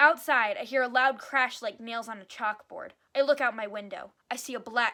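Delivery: ordinary delivery, nothing marked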